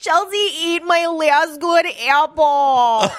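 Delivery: put-on high Minnesota accent with "apple" long and stretched. Retelling what a frightened woman said, Minnesota accent. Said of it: "she said it with a Minnesota accent".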